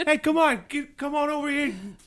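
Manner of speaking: put-on South Boston accent. Imitating a woman proposing marriage: put-on Southie Boston accent. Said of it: "like, Southie Boston".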